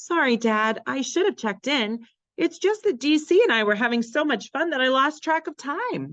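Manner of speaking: bubbly, very high chattering voice. Reading a story, a girl answers her father after coming home late, in a bubbly voice. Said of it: "she explained in a bubbly voice".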